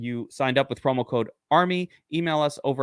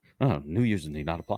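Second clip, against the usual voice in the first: commercial legal fine-print disclaimer read voice; 8 semitones lower, 4 dB quieter than usual. Joking about reading an ad's fine print: fast-talking commercial disclaimer. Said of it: "I wanna speak quickly, like in the commercial".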